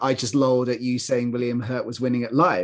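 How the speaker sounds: ordinary talk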